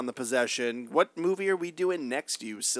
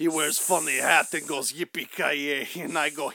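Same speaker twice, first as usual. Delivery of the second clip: poorly done fake Russian accent. Joking with two others, a speaker tries another accent bit: bad fake Russian accent. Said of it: "still offensive, but maybe better".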